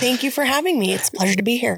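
clean-cut, formal on-air radio broadcaster delivery. Guest thanks the hosts at the start of the episode, formal radio voice. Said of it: "Formal radio voice".

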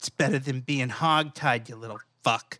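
low, menacing stage whisper. Player's character half-whispers into the ear of a roped, hoofed creature, menacing half-whisper. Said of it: "I whisper menacingly into his ear".

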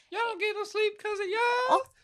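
put-on girlish yell. Quoting the girl in a vine clanging pots and pans: retelling a yell. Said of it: "she's like yelling like".

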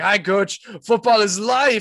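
mock exuberant, high, loud, bursting with energy. Retelling how a character joins a struggling team: imitating energetic Danny Rojas. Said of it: "this full of energy".

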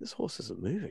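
soft mutter, almost to himself. Retelling what a man muttered while the speaker stood close, said quietly, almost to himself. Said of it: "just kind of said it really quietly, almost like to himself".

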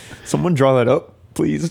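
on the verge of laughing, laughter barely held back. Asking someone to draw the logo, trying not to laugh. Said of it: "I'm trying not to laugh right now".

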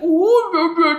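goofy impression voice, very high and loud.

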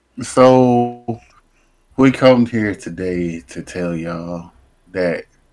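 grave, eulogy-like tone. Announcing major breaking news to y'all on a Friday, solemn like a eulogy. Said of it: "Like he delivering a eulogy".

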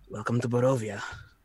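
quietly muttered under the breath. Climbing to the driver's side, he says it under his breath. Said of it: "under his breath he goes".

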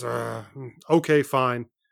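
kind of grumbling, grumbled tone. Retelling a kid's reply to a low trade offer: imitating someone grumbling. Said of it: "He kinda grumbles and says".

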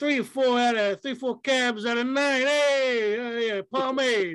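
put-on Italian New York accent. Imitating New York food reviewers on Instagram: imitating Italian New York mooks. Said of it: "Italian mooks".

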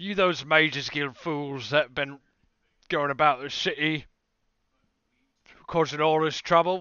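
very loud, gruff thug voice. Voicing a gruff-looking mob leader holding a cudgel: gruff man's voice. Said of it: "And he says".

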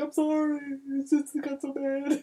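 high, drawn-out, blubbering bawling. Retelling a scene where Shazam turns around to Superman, imitating Shazam crying. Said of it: "he's just bawling, crying".

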